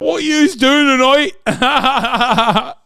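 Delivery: put-on shrill, very loud, high-pitched Geordie accent. Showing how to do the Newcastle accent, in a Geordie Shore-style Geordie accent. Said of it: "Learn the Newcastle accent from this".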